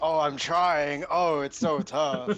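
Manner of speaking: put-on struggling, unmotivated voice. Mocking a struggling character who keeps attacking: imitating unmotivated Steve. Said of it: "is Steve like".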